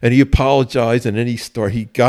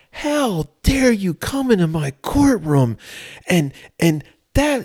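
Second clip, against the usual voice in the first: put-on screaming, pitched higher; 8 semitones higher than usual. Retelling a judge screaming at the defendant: imitating a judge screaming. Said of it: "he starts screaming at the".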